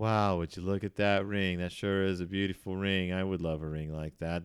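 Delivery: flat, level monotone throughout. Imitating a waitress looking at a ring, flat monotone. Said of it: "she delivers every line like this... Incredibly monotone".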